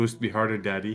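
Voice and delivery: ordinary talk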